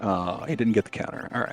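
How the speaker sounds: sounding let down. Commentating as a runner fails to get a counter, disappointed. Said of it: "You sound so disappointed".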